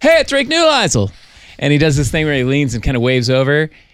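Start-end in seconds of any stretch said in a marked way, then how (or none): 0.0-1.1 mock very high shout, as if from afar. Retelling how someone on the street called out: imitating someone shouting. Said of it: "someone from the street shouted".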